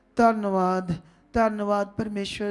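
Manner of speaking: limp, slack, listless, half-hearted delivery. Imitating how many people pray, in a mock limp, half-hearted way. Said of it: "ऐसे नहीं जैसे, ऐसे कई लोग ... ऐसे कुछ नहीं होना ढीले ढूले".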